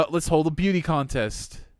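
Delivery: normal talking voice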